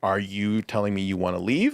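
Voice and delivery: put-on slow secretive hush. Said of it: "very slowly and, like, uh, secretively".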